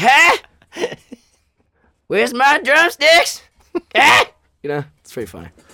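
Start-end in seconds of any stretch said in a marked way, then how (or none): 0.0-4.2 high, loud, drawn-out cartoon kid voice. Acting out Kevin, who sounds just like him: Cartman voice. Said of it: "He sounds just like him".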